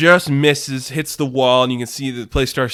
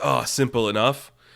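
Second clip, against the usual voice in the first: put-on cocky smuggler voice, quieter; 5 dB quieter than usual. Retelling Han Solo igniting a saber: Han Solo voice. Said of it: "And Han Solo, he just ignites the saber. He's like".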